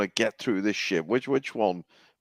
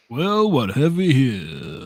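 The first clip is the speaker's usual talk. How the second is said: put-on suave voice, higher and louder; 4 semitones higher, 5 dB louder than usual. Performing a line on request in the style of Lando Calrissian. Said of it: "give us this line in the style of Lando Calrissian".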